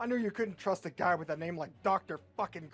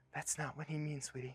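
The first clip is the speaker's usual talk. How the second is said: hushed, soft half-whisper; 2 semitones lower, 8 dB quieter than usual. Reading a scene aloud where a character leans over to someone: half-whispering. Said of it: "Reach leans over and whispers to him".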